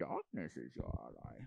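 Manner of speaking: breathy, breathed-out villain-style whisper. Chatting about voice acting, showing off a Bane impression. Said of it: "I could probably do a good Bane".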